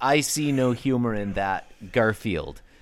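ordinary delivery

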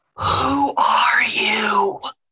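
hushed whisper. Voicing a character who slips behind Victor's shoulder: whispering. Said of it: "just whisper".

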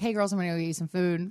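ordinary delivery

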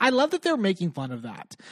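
heavy sarcasm, feigned delight, sing-song swoops. Reacting to a scene the speakers are discussing, sarcastic. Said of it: "I'm being sarcastic".

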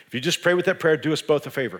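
usual speaking voice

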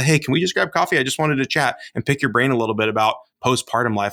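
normal talking voice

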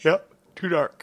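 slow words, yawned while talking.

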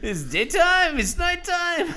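very high, loud mock French accent.

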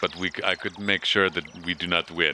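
put-on Austrian accent drifting into Russian.

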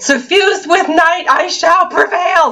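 high, mocking, theatrical, sarcastic scream. Describing shouting a game quote at the TV from the couch, retelling a sarcastic scream. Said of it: "screaming, sarcastically at my TV".

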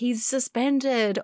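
drawn-out, high, awestruck gasp.

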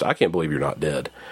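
put-on flat, resigned deadpan, low and soft. Retelling what a man said, retelling a flat, resigned line. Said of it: "Just this resigned to fact".

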